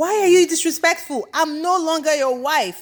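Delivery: high, loud screaming. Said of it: "Melody screams back like".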